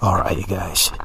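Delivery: whispered voice. Opening footage for a video update to viewers, whispering. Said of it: "I don't know why I'm whispering".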